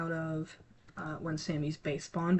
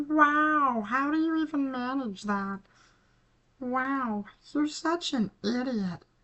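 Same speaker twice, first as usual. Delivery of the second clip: high, loud, squeaky puppet voice with stretched "wow"; 8 semitones higher, 6 dB louder than usual. After an embarrassing slip, the speaker does an Elmo impression. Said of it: "a terrible Elmo impression".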